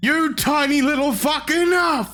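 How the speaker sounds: shrill, very high, furious yell. Voicing a man who screams with eyes closed while hitting you; angry screaming. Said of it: "to shout at him".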